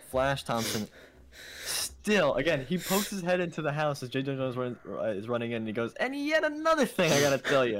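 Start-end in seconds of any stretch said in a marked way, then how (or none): 5.9-7.8 mock very high, shrill, loud screaming. Retelling how a kid chases an old man: imitating Flash Thompson screaming. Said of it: "just screaming at him".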